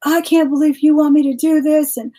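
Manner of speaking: furious, high, top-of-lungs angry scream. Recounting a woman in the back cursing and breaking things; retelling a woman's screaming. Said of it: "screaming at the top of her lungs".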